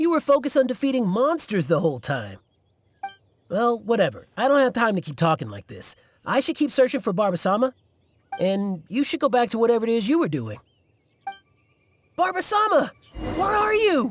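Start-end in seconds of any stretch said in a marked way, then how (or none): 12.2-14.1 yelling, much higher and slower. Game character calls out while searching for Barbara-sama, yelling. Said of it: "You're yelling even louder than me".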